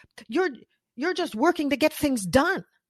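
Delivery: nasty, hostile screaming, high-pitched. Retelling a man screaming at the speaker in front of everybody, mock screaming, very negative. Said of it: "he's screaming at me in this very negative voice".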